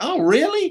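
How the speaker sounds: very high, loud, astonished surprised tone. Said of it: "he went".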